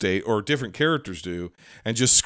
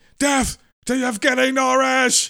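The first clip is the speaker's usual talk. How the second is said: very high, piercing shriek. Retelling an actress's scene from a film: imitating Jennifer Jason Leigh screaming. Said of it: "Jennifer Jason Leigh is screaming".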